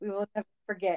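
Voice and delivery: ordinary delivery, nothing marked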